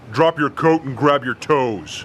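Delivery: deep, low voice. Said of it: "We hear a deep voice say".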